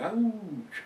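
pained, high-pitched ouch.

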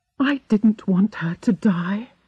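hushed whisper. A woman answers the narrator, who asked her what was wrong, whispered. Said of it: "she whispered".

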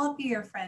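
ordinary delivery

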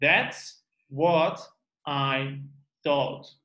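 very slow, with each word drawn out. Modeling a practice phrase again, saying it very slowly. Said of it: "Let's just say it slowly".

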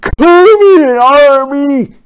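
booming, thundering call, very high and very loud. Narrator reads the general calling his army over a walkie-talkie, thundering. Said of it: "he thundered".

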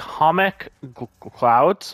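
halting, stumbling stutter.

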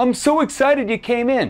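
very high, overly enthusiastic, gushing salesman voice. Speaker mimicking a used car salesman greeting a customer: mock overly enthusiastic salesman. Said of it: "like the used car salesman that runs out there".

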